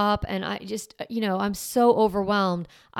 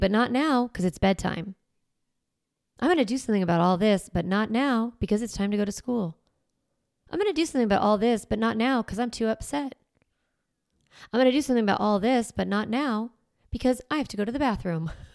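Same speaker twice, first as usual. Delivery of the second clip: put-on, firm, strong tone with slightly snarky edge. Retelling what was said to the kids while cooking: imitating own strong, snarky tone. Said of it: "very strong and slightly snarky".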